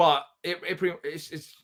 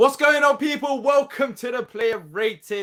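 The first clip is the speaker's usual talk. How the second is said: upbeat, eager, high, loud and enthusiastic voice; 8 semitones higher, 5 dB louder than usual. Welcoming viewers to the player ratings, enthusiastic. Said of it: "I don't know why I sound so enthusiastic".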